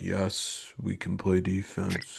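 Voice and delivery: level, very slow, flat droning monotone. Imitating McDavid at press conferences after tight wins, monotone McDavid impression. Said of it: "That monotone voice he does".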